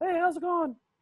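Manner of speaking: very high pet-talk voice. Showing the voice used with cats, high-pitched pet voice. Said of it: "I go high pitch for all of them".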